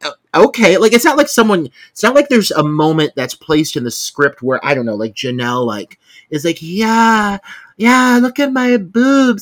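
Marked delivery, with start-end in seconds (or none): 6.6-9.4 very slow, high, stretched-out actress voice. Acting out a line for the character Janelle: Anna Faris voice. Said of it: "I'm trying to say it like Anna Faris".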